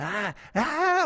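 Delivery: mild, slow, drawn-out yell of agony. Retelling lying on the floor with a kidney stone: retelling a scream. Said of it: "And I'm screaming".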